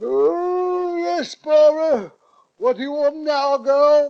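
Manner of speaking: strained, high, loud, with stretched "oh". Answering a knock while pretending to be Gardner: strained voice imitating Gardner. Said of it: "I strained my voice and called out".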